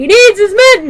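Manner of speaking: loud, high-pitched yelling.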